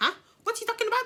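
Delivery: very high, soft, little put-on Indian accent. Retelling telling a man his wife is at the bar, imitating his Indian accent. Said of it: "in his little Indian accent".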